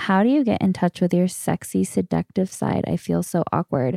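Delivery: ordinary delivery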